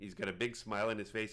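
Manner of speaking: plain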